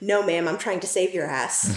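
ordinary talk

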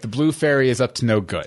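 normal talking voice

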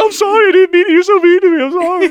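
put-on cowering, puppyish, apologetic tone. Imitating Alex apologizing after being teased back: imitating Alex cowering. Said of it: "he's like a little puppy cowering".

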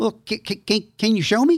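put-on heavy, broad Texas accent, high and slow. Retelling what Brother Nichols asked you to show him, in Brother Nichols's thick Texas accent, high voice. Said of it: "had this thick Texas accent".

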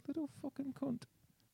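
very quiet, hushed, high mutter under the breath. Recounting a film scene where a waved-at man doesn't wave back: Colin Farrell muttering under breath. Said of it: "just under his breath he's like".

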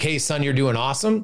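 normal talking voice

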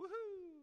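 joyful cheer, very high, loud whoop.

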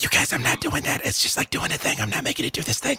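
hushed, whispered aside. In character, speaking to the group through a psychic connection: whispering. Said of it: "I'm still whispering in our psychic connection".

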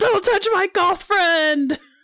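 yelling, shouted battle cry. A player's character charges as a creature attacks her friend, yelling into battle. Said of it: "Yells into battle".

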